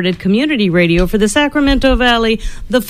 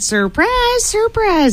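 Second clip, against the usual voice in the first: very high, goofy Southern drawl; 12 semitones higher than usual. Introducing the evening's theme to the audience, in a Gomer Pyle voice. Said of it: "that's my Gomer Pyle voice".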